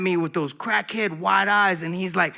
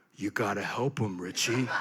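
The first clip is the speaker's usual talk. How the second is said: low, soft, deep and hushed cartoon dog voice; 11 semitones lower, 9 dB quieter than usual. Recalling hearing God's voice while standing over a guy, Goliath the dog voice. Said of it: "I always hear God's voice as the dog from Davy and Goliath".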